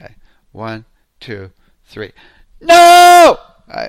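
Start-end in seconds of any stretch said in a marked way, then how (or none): 2.6-3.4 long, drawn-out, very loud, very high shout. Demonstrating the hand-out exercise before the group tries, really loud shouted no. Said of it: "let me demonstrate first. Warning, warning. I'm going to get really loud here".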